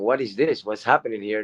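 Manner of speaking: plain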